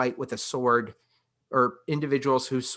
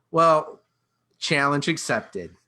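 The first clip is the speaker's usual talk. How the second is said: ordinary delivery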